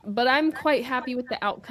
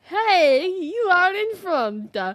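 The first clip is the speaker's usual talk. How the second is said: put-on very slow, very high, loud, stretched-out Italian accent; 9 semitones higher, 8 dB louder than usual. Retelling the engineer's radio message: imitating an Italian race engineer. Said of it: "exactly how it was said".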